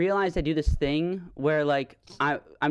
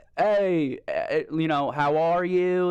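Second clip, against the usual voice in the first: mock dumb Southern accent, much slower. Mocking how spanish speakers would sound speaking english, in a dumb southern accent. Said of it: "speaking like a dumb Southern voice".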